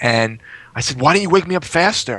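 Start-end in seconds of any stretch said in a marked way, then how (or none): 1.0-2.2 irritated, accusing, angry and demanding, pitched up. Retelling asking a wife why she didn't wake him: imitating being mad. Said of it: "I was all mad at her".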